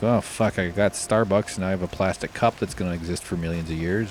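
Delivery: plain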